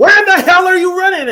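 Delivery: very high, very loud, shrill screaming. Retelling a reaction to a missed run: imitating screaming at the TV. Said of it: "I'm screaming, like".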